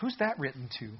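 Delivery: gentle, soft, calm, loving, kindly tone. Recounting how he asked about a passage he had read, retelling a calm, loving question. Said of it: "calm, loving tone".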